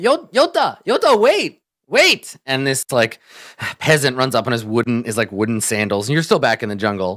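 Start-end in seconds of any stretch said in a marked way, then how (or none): 0.0-2.4 very high, very slow, stammered, drawn-out shout. Voicing a man shouting from behind at a fleeing character: man shouting. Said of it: "a man shouting".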